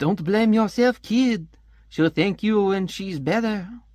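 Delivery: terrible, high-pitched fake French-Canadian accent. Retelling a scene, voicing the brother's short friend: terrible fake French-Canadian accent. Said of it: "terrible fake accent for you".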